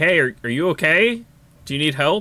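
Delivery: calling-out voice. Calling out to check on someone who may need help, raised voice, not shouting. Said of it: "not shout, but raise my voice".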